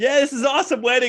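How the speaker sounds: high, loud, cheery, excited guest voice.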